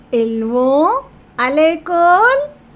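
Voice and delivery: voice climbing on école, question-like rising tune. Teaching a french lesson, demonstrating a spoken question: rising question intonation. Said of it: "So you raised your voice and it becomes a question".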